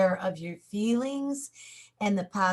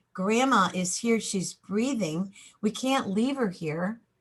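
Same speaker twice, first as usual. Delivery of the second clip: ordinary delivery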